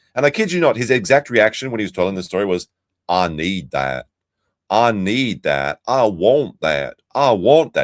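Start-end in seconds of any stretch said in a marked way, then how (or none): 3.1-7.9 put-on silly inflection, much slower. Retelling a man's exact reaction to the orange trucks, imitating his silly inflection. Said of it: "He even put in that like silly inflection in his voice".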